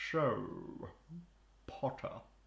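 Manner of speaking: each word overpronounced and over-enunciated. Imitating an actor's line from a Potter film: imitating an actor's overpronounced speech. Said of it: "weird thing where he overpronounces every word".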